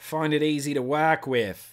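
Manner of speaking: put-on broad Australian accent. Talking about a cotton used for months, switching into an Australian accent. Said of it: "That's my Australian accent".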